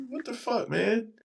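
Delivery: high outraged yell.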